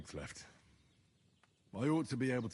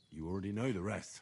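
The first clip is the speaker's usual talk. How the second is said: normal talking voice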